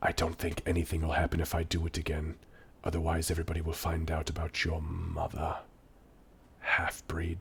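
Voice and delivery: low, very hushed, barely audible whisper. Narrating a scene as the innkeeper, whispering up to the guy: whispering. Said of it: "he whispers up to the guy".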